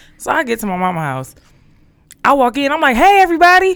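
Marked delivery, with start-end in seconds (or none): 3.0-3.8 put-on very high, loud, hyper, hyped-up voice. Retelling walking into a family home: imitating own hyped greeting. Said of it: "All hype and shit".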